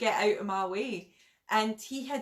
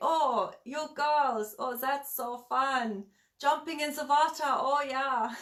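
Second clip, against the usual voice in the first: put-on chatty, slow old German man voice; 4 semitones higher than usual. Retelling what a chatty old German man said: imitating an old German man. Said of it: "this, like, kind of old German guy. And, um, he'd be like".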